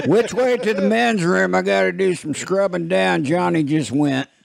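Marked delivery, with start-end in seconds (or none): 0.1-3.2 rasping, very high-pitched, rough comedian voice. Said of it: "Is that Larry the Cable Guy voice again?".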